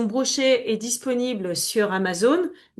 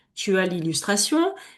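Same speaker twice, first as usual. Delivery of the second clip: ordinary talk, nothing marked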